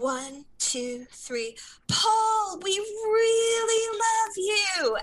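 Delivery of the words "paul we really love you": very high, all-out loud shout. Recounting a quiet concert moment, the speaker reenacts shouting to Paul: retelling a loud shout. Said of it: "as loud as we possibly could".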